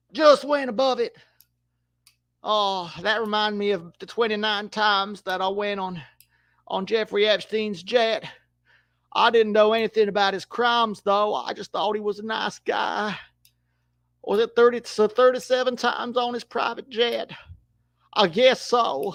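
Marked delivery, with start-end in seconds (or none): 3.0-19.2 rough, raspy put-on Southern accent. During football commentary, speaker jokes in character: raspy Southern voice impression. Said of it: "he's more of a raspy Southern voice".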